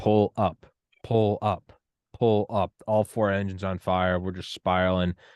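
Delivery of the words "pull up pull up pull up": slow, mechanical robotic alarm voice. Comparing the country to a crashing 747, the speaker mimics the robot voice. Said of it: "the robot voice just going".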